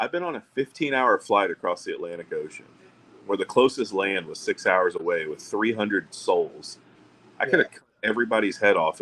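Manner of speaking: usual speaking voice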